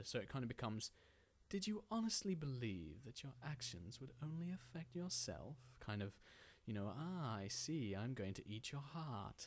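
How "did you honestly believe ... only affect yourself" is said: lightly sinister, creepy tone, pitched up. Demonstrating one reading of a line for a reel, light and sinister. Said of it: "It's very light and sinister".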